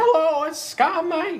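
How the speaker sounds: weird, very high-pitched, squeezed-up Southern twang. Showing the voice given to Scott Mike: weird high-pitched Southern twang. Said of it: "this weird, high-pitched Southern twang".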